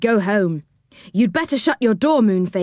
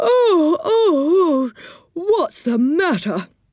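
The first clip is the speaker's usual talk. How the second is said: drowsy, just-woken mumble in a sleepy, high voice; 7 semitones higher than usual. Narrator voices Moonface answering What's-His-Name at the window, sleepy voice. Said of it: "Said Moonface in a sleepy voice".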